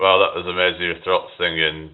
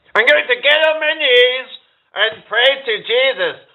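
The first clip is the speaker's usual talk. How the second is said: very high, whiny put-on voice; 4 dB louder than usual. Trying to do a character's voice, in a whiny Cartman voice. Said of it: "I'm trying to do his voice. He's got this quite whiny kind of voice".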